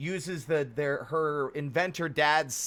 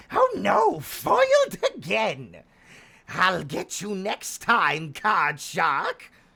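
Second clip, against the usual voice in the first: swooping nineties edutainment game villain voice; 3 semitones higher than usual. Joking about how the game's maker sounds, as a nineties edutainment game villain. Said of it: "Sounds like a villain in a fucking uh".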